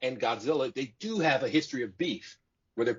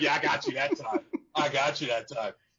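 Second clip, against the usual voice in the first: put-on smug, gloating jeer broken by laughter; 2 semitones higher than usual. Retelling a movie fight where one monster laughs at the other, mock-laughing taunt. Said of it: "at him like".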